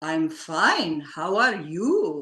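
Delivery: grand, big, beautiful booming voice. Retelling a man's reply to the speaker's greeting, in a big booming voice. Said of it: "in this big, beautiful, booming voice".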